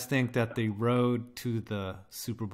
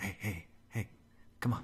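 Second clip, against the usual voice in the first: put-on creepy uncle voice, lower and quieter; 4 semitones lower, 13 dB quieter than usual. Teasing a chat member by acting him out: imitating Tree as creepy uncle. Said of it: "that's how I imagine Tree tonight".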